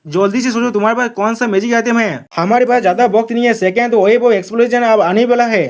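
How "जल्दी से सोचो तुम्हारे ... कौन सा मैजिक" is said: usual speaking voice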